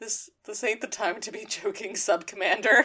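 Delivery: acted utterly beaten, deflated, soft defeated tone. Recounting what Hot Rod said back at the base, imitating his defeated tone. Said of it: "with the most defeated tone of voice".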